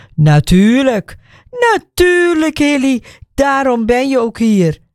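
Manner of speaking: high, scoffing, mocking, sarcastic tone. A man responds to a dismissive remark; mocking. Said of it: "Hij reageert spottend".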